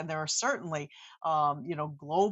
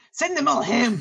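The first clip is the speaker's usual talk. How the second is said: great Scottish brogue, very loud and pitched up; 8 semitones higher, 10 dB louder than usual. Quoting his Scottish former father-in-law's saying, imitating a great Scottish brogue. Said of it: "would say with his great Scottish brogue".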